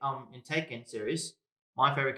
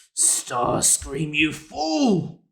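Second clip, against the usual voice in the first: put-on robot villain voice, louder; 3 semitones higher, 10 dB louder than usual. Showing off practiced Transformers voices to a co-host, doing a Megatron voice. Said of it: "that's Megatron and Starscream".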